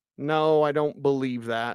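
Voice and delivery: ordinary talk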